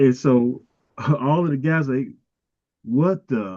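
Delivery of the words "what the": startled exclamation in a put-on Italian accent. Retelling the guys' reaction when the door is kicked in; Italian accent. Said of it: "That's my that's my Italian accent".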